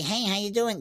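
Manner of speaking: high, soft, nasal ventriloquist-dummy puppet voice. Describing the voice used for a parrot puppet, nasal ventriloquist voice. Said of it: "That kind of nasally".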